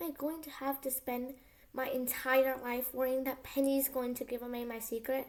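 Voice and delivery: ordinary talk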